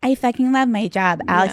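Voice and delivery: put-on happy-go-lucky chirp, bright and fake cheerful. Mocking how a celebrity is expected to answer: imitating fake smiling cheerfulness. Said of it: "rather than smiling and be like".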